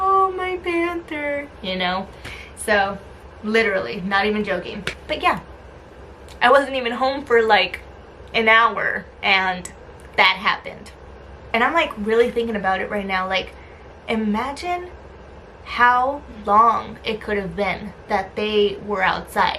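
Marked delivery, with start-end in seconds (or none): 0.0-1.5 high, slow, sweet cooing voice. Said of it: "go and sweet talk him and be like".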